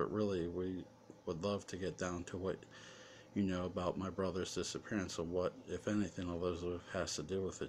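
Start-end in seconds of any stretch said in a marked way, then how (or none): none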